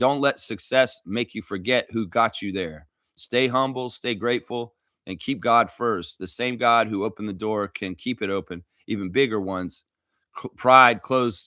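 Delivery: plain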